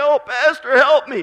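play-acted high, whiny crying. Imitating a listener pleading to the pastor for help: mock crying plea. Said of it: "you're full of crying noise".

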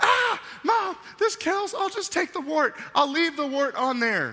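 shrill, very high-pitched screeching. Retelling Mom scrubbing a wart in the bathroom: retelling own screaming. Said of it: "I start screaming".

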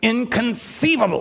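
put-on lisp on "inconceivable". Quoting a line from The Princess Bride, in a Princess Bride lisping voice. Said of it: "I'm trying to do the lisp".

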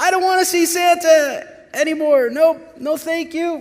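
mock shrill, very high, loud, frightened child voice. Retelling a kid finally reaching Santa after the line, imitating a terrified child.

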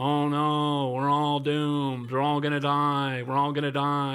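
put-on slow, mournful, gloomy cartoon doom moan. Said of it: "And he just does this the whole cartoon".

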